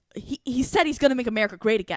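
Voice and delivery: heated, stubborn, angry, insistent tone. Retelling a woman's reply to the speaker's question about her vote: imitating angry insistence. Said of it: "just got even more angry with me".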